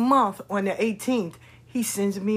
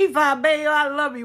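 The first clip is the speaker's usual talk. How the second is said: put-on light rural country accent, pitched up; 5 semitones higher, 4 dB louder than usual. Imitating a little brother's loving phone call: little country accent. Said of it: "with his little country accent".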